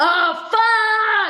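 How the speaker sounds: shrill, very high, loud cheerleader-style scream. Describing how their real orgasms sound, the speaker shows it: loud cheerleader-style scream. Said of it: "like this loud, like cheerleader scream".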